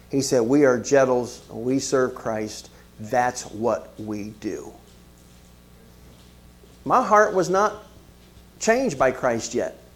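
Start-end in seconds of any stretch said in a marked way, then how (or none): 0.4-4.7 put-on slow, stern, fatherly pronouncing tone. Retelling a father's warning never to ask to skip church: imitating stern speech. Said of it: "he said this very sternly".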